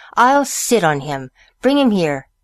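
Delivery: ordinary delivery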